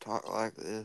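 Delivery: rural monotone voice. Showing others how to keep the impression going, use a rural, monotone Bill Clinton voice. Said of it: "You gotta keep it rural, monotone".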